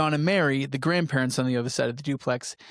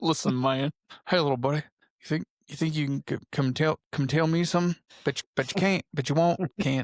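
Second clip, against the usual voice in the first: put-on folksy Texas accent. Speaker performs a bit as George Bush, in a George Bush impression. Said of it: "That's my George Bush impression".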